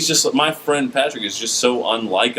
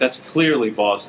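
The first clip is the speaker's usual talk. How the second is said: plain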